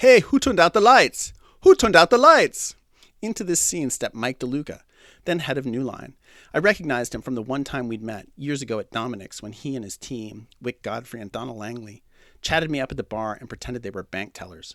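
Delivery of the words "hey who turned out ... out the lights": put-on shrill, very loud, barking Austrian accent at full volume. Retelling an incensed guest demanding who turned out the lights: barking in Arnold Schwarzenegger's Austrian accent. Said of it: "barking in his classic Austrian accent".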